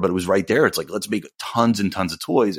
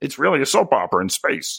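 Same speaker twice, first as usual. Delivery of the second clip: put-on froggy puppet-like voice, higher pitch; 5 semitones higher than usual. Imitating George Lucas describing the prequels: George Lucas impression, Kermit-like voice. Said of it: "And he talks like that".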